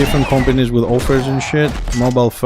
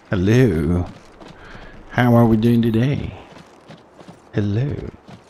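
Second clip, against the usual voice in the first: put-on radio announcer voice, lower pitch; 2 semitones lower, 3 dB quieter than usual. Greeting a viewer at the start of a stream, in a put-on radio voice. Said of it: "My radio voice".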